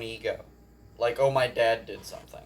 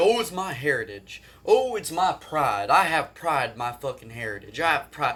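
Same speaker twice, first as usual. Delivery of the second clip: snide, mocking parody in a puffed-up, boastful voice; 3 semitones higher, 3 dB louder than usual. Imitating people who say they take pride in their heritage. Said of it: "Fucking people that are like".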